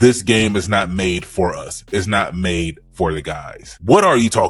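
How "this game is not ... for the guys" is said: normal talking voice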